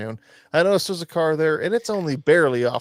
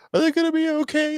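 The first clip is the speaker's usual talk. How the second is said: put-on very high, worried, anxious little kid voice; 13 semitones higher than usual. Retelling a three-year-old in the back seat: imitating a worried child. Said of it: "so worried about them".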